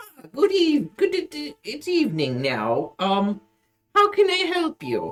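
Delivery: put-on high, elderly old man voice. Voicing an elderly shopkeeper greeting a customer: elderly man voice. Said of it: "there's a elder man, elderly man with beard, wizard hat ... and he goes".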